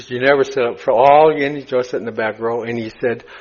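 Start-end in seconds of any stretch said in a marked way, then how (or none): none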